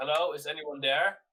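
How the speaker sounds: loud yell, calling out to be heard. Calling out to anyone inside, in character: yelling out. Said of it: "I just yell out".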